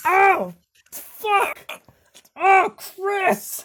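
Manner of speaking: very loud, very high, drawn-out pained scream. Voicing a character who just shot himself in the foot: screaming. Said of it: "he starts screaming".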